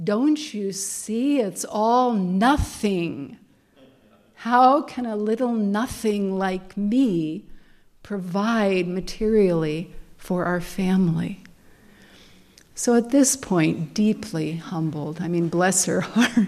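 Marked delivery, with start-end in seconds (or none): 0.0-11.4 light imitation of a booming, otherworldly heavenly voice. Retelling a story where a voice speaks from the ether: imitating a booming voice. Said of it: "this booming voice comes out of the ether".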